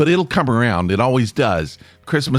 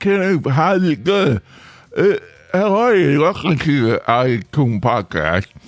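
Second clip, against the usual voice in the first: numb-tongued speech, higher; 4 semitones higher than usual. Host welcomes podcast listeners after throat spray left the tongue numb, talking with a numb tongue. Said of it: "So now my tongue is numb".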